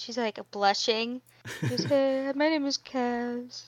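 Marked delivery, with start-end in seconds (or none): 1.8-3.7 quiet character voice, much quieter. Player voices Cass introducing herself to a boy, talking really quietly. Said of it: "She's like really quietly talking".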